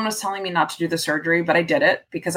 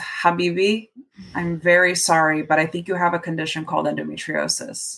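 put-on compassionate, sympathetic voice. Retelling what the doctor said: imitating a doctor's compassionate voice. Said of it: "just the most compassion, sympathy in his voice".

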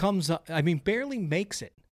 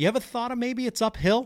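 mock shouted, pitched-up yell; 7 semitones higher than usual. Retelling a reply shouted to a golfer: retelling own yell. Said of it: "And I just yelled".

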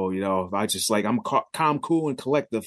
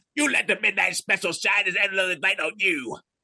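very high-pitched radio DJ announcer voice; 9 semitones higher than usual. Offering yourself in case they are looking for a disc jockey: Wolfman Jack voice. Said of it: "I could be like the next Wolfman Jack".

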